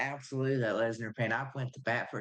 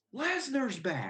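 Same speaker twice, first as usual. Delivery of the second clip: play-acted, sudden, very high-pitched shriek; 13 semitones higher than usual. Retelling telling the fiance who had woken up: imitating own yell. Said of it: "I yelled".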